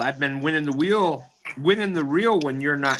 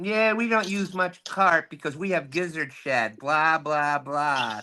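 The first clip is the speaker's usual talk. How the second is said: mock superior, self-important, haughty, entitled voice. Retelling what a caller said when he called in, imitating James, entitled voice. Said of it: "He says in an entitled voice".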